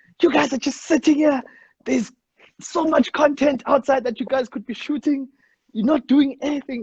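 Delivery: put-on, very high-pitched, furious, angry screaming rant. Retelling how someone burst in on lazing people: imitating P C screaming angrily. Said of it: "he was screaming, screaming".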